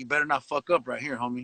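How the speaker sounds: serious, grave tone. Retelling a warning to a friend through a gate: retelling a serious warning. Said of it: "with a serious face and I said".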